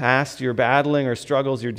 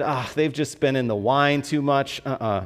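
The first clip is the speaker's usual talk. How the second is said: ordinary delivery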